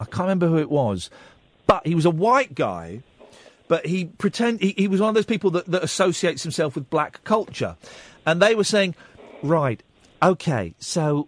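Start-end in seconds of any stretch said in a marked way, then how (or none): 9.4-11.3 New Zealand accent on these words. Retelling what a lawyer said at a compliance meeting: New Zealand accent. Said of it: "this is me doing a New Zealand accent".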